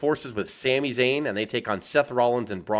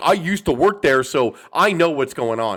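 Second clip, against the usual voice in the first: put-on self-important, loud, know-it-all boasting; 3 semitones higher, 6 dB louder than usual. Mocking former insiders who claim inside knowledge: imitating know-it-all former insiders. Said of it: "all these people that are just like".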